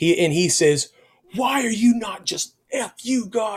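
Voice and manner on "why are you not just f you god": furious, loud, high angry yell. Retelling an intruder yelling in the dressing room: imitating a loud angry man. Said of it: "he is very loud".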